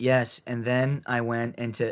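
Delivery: flat, uninflected, dead-level monotone reading. Speaker mimicking the person who reads lines with them, flat monotone reading. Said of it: "they got the monotone voice".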